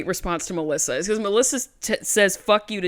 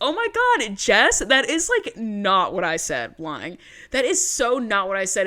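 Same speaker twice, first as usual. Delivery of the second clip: ordinary delivery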